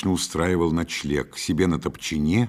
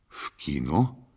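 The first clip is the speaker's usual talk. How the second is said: surprised tone, lower in pitch and quieter; 2 semitones lower, 5 dB quieter than usual. Meladze, told the narrator took her to the cinema, asks back, surprised. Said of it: "удивился он".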